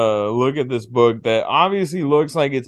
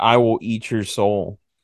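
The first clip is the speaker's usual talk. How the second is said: put-on possessed girl voice, lower; 4 semitones lower than usual. Retelling a possessed girl's line during an exorcism: imitating a possessed girl. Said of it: "she's like".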